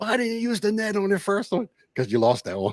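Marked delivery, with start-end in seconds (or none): 0.0-1.7 very high, shrieked put-on yell. Retelling watching a fishing video, yelling at the screen: retelling own screaming. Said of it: "I'm screaming at the screen like".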